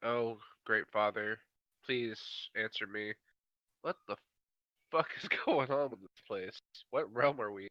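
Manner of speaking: half-whispered murmur under the breath. A tabletop player's character calls on a deity, half-whispering a prayer. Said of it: "start whispering".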